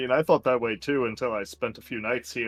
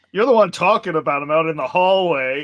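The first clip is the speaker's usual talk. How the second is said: loud acted retort, higher and louder; 6 semitones higher, 11 dB louder than usual. Answering another character in the hallway in character: saying it really loudly. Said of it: "I say really loudly".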